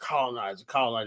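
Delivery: soft, sly, taunting voice under the breath.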